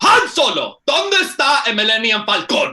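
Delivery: loud dubbed-movie yelling, high and swooping. Retelling a line from the Spanish Star Wars dub: imitating Spanish dub yelling. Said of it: "Why you yelling, man?".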